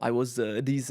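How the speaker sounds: put-on Russian accent, halting words. Retelling what a girl at the gym said: imitating a Russian accent. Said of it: "with a Russian accent".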